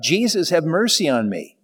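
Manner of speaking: ordinary delivery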